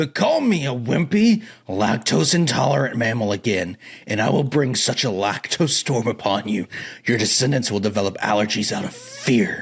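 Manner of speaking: low, trembling, barely restrained volcanic rage. A gorilla warlord confronts the one who insulted him, low, trembling with fury. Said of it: "This week, the Yapaholics plunge back into the dairy-fueled drama of Kongus Maximus—a probiotic-enhanced gorilla hell-bent on revenge after the Battle of Dairy Hill. / [name] closes his eyes. / voice".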